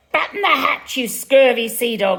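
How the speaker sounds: loud, piercing, shrieking parrot voice. Narrator reading a story, voicing the parrot's line: shrieking parrot voice. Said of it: "the parrot shrieks".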